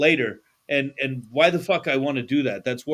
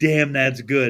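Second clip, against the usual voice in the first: put-on dead-serious, grave voice. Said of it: "she did it as serious as could be".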